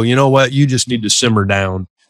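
ordinary talk

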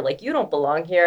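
put-on condescending tone. Retelling how strangers approached them: imitating a condescending tone. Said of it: "a very condescending tone".

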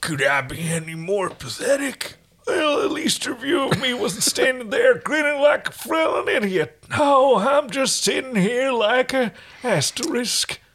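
put-on aged-up old man voice, pitched very high. A reader voices the hero's thought bubble, aged up forty or fifty years, in an old-man voice. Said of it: "I can just make him even older. Let's just try that. Instead of, like, doing something funny when they're thinking, we're just going to age them up, say, about 40 or 50 years. / we're just going to ag".

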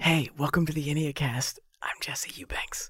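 soft, hushed whisper. Welcoming listeners at the start of the episode: whispering. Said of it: "we're whispering".

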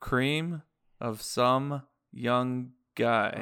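very slow, deliberate, word-by-word delivery. Repeating a phrase for someone who didn't understand it: saying it very slowly. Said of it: "I'll say it slow for you".

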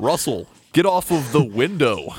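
put-on American accent. Telling russell to get off the window, urged to try a put-on american accent. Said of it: "You gotta use your best American accent".

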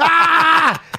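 high, loud, playful yelling.

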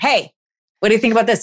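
quick, insistent, nudging little prod. Acting out an inner voice that started as a whisper, now a little louder. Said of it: "a little bit louder".

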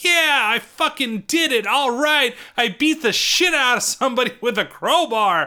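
high, all worked up, thrilled excitement. Describing a movie scene, acting out Tetsuo after the crowbar hit, imitating his excitement. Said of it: "And he's all excited".

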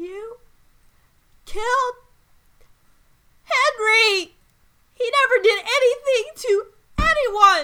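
very high, loud, trembling cry. Voicing Bellis as she stands up from her dead familiar, very high and trembly. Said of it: "very high and trembly voice".

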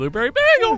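very high voice cracking on "blueberry bagel". Recreating an earlier moment saying the words: voice crack on blueberry bagel. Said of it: "I definitely had a voice crack. It was like".

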